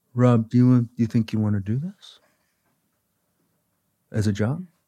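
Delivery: tough, demanding, direct teacher-like voice. Retelling a college conference with an acting teacher: Ed Golden impersonation. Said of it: "a perfect Ed Golden impersonation".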